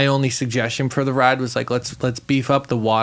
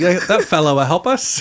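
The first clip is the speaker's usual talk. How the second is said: put-on plain British English accent; 4 semitones higher than usual. Imitating another speaker's words about the fella: english accent. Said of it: "You just had a really English accent there".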